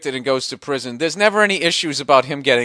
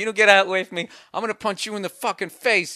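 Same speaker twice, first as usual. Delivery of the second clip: mock anger, furious-sounding, threatening tone; 5 semitones higher than usual. Repeating back the threat the other speaker just quoted, mock-angry threat. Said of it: "You just sounded like".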